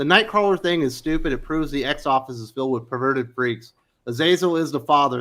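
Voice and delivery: ordinary talk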